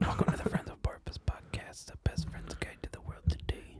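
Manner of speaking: quiet, breathy whispering. Asked to whisper, performing the podcast intro: whispering. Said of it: "Just whisper".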